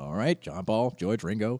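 normal talking voice

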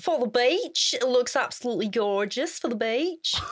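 put-on Australian accent, hairdresser voice. Acting out the hairdresser's line about the beach: put-on Australian accent. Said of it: "That was an Australian accent".

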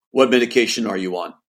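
icy, cold delivery in broken English. Retelling what a man on the monitor asked him, imitating cold broken English. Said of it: "saying this in broken English".

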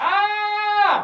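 big, loud, high-pitched shout.

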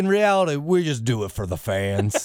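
put-on Southern accent. Imitating a wrestler's line to the fans: imitating Kane in a southern accent. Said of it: "He's got a southern accent now, too, Kane?".

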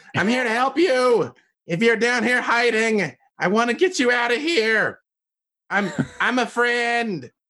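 high, full-lung yell at top of lungs. Playing a halfling in the game, yelling at the top of their lungs. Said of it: "At the top of my halfling lungs, I just yell".

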